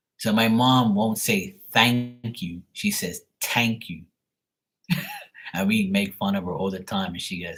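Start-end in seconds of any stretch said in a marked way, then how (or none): 3.4-4.0 put-on pitched-up non-native English accent with mispronunciations. Retelling what the mom says when teased about her English, imitating mom's mispronunciations. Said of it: "They can't pronounce the words properly".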